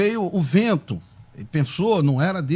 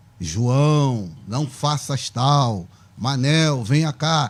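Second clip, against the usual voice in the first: otherworldly, deep, drawn-out voice from beyond; 5 semitones lower than usual. Speaker describing how people expect to hear God speak, voice from beyond. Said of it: "Uma voz do além".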